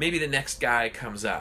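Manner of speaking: ordinary talk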